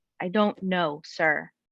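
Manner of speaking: slow, fed-up, over-it annoyed voice with attitude. Retelling her own reply to an officer: imitating her own annoyed attitude. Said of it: "with just attitude, annoyed".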